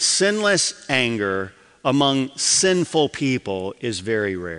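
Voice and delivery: slow, measured, deliberate, word by word. Repeating a point again to listeners, said slowly. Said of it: "I'm going to say this slowly".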